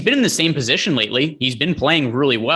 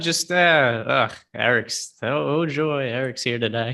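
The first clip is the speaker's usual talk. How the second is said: put-on slow, unenthusiastic, sarcastic delivery; 4 dB quieter than usual. Speaker reads out someone's comment in the tone they read it in, mock-sarcastic. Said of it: "That's that's the tone I read it in".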